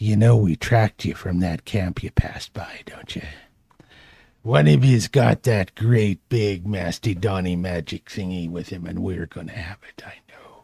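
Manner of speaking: low, threatening whisper, very close up. Narrating a game scene, an attacker speaks to a prone character, whispering right in her face. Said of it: "whispering with his foul breath right in her face".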